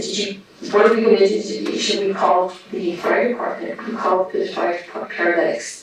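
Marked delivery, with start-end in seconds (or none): none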